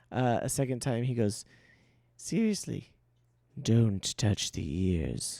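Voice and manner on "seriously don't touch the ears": slightly deeper voice, slow, drawn out and swooping. Voicing a character who repeats a warning a second time: voice a little deeper. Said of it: "his voice gets a little deeper".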